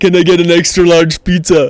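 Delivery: put-on Austrian accent. Recalling grade-eight prank calls, the speaker orders pizza in an Arnie voice. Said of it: "we just prank call people with the Arnie voice".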